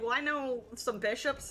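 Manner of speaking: plain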